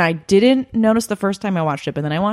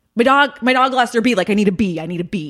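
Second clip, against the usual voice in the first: put-on frantic, panicked delivery. Retelling a Best in Show pet store scene, imitating Parker Posey's frantic panic. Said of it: "she's like frantically like running around".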